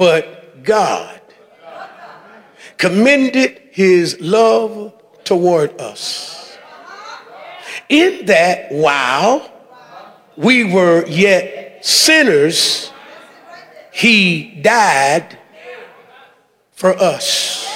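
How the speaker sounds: deliberate, slow, very low-pitched reading. A speaker rereads a Bible verse to listeners, reading it slowly. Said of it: "Let me read it again slowly".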